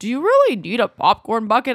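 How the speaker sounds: swooping, sing-song put-on voice. Recounting a Disney trip, quoting the listener's question: impression of the other person. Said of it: "perfect impression of me".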